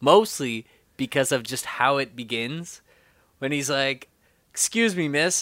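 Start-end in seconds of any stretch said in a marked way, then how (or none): 4.5-5.4 sleazy, smooth-talking, douchey voice, pitched up. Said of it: "he does that amazingly douchey".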